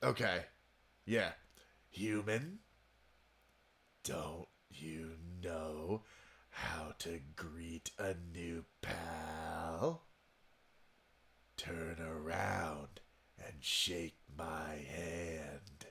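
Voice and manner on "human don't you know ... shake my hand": deep raspy voice, much lower, quieter. Voicing a game character greeting the player, in a raspy character voice. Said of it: "Doesn't he kind of have like a raspy voice?".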